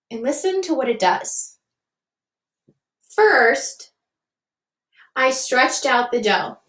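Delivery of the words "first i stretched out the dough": brief, short pause after "first". Showing what a comma does when reading a sentence, short pause after first. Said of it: "Did you hear that little pause there?".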